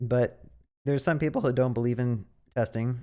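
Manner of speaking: voice breaks on the words. Speaker talking about testing in his videos, voice cracking. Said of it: "my voice just like cracked right there".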